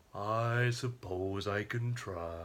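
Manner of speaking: low, very slow drawl, every word dragged. Answering a request to do a cartoon donkey voice: Eeyore voice. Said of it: "Can you do Eeyore?".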